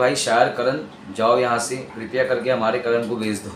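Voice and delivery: ordinary delivery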